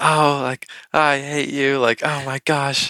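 put-on childish tantrum wail. Retelling how they yelled as an emotional child; retelling a childhood yell. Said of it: "I used to yell at the top of my lungs".

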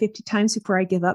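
usual speaking voice

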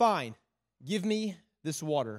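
mock weary, low, resigned, giving-in tone. Retelling Jesus's talk with a woman, voicing her reply, mock-weary, tired of talking. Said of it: "I hear this tone, is that she's tired of the conversation".

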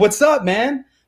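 bursting with energy. Showing a seller coming in too strong, high-energy greeting. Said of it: "I came in with all this energy".

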